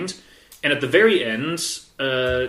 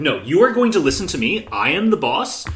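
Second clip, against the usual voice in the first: ordinary talk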